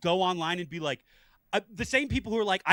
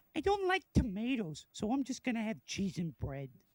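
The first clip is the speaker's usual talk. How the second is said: comic, mocking, put-on fussy, picky grown-up voice; 3 semitones higher, 8 dB quieter than usual. Imitating grown adults who won't eat tomatoes: hilarious put-on picky-adult voice. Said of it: "That voice is hilarious".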